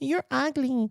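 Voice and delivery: put-on very high-pitched, angry little kid voice. Speaker mocking a man who keeps crying, imitating Mark as a mad kid. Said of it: "in kindergarten who, who's mad. He's like".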